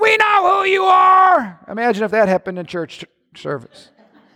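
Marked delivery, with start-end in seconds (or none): 0.0-1.6 high, slow demonic yell. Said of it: "Demons started yelling".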